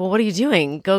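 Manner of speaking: ordinary delivery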